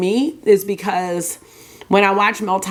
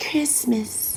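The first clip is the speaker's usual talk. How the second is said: soft, breathy pop-star voice, word breathed out; 4 semitones higher, 8 dB quieter than usual. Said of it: "That's my [name] voice".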